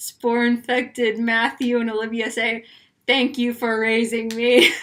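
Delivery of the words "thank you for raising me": very robotic, machine-like voice. Pitching an episode title as spore-infected versions of themselves, in a very robotic voice. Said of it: "in a very robotic voice".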